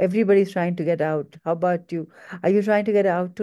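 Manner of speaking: ordinary delivery, nothing marked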